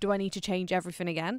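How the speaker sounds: ordinary delivery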